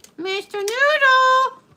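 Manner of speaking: very high, squeaky puppet voice. Performing a line for a listener who praises it, doing an Elmo voice. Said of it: "you do the voice good".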